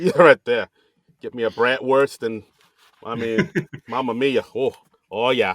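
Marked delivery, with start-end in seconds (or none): 1.2-5.5 rough, put-on Chicago accent. Riffing in conversation, attempting a Chicago accent. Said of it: "I thought I was going for a Chicago accent".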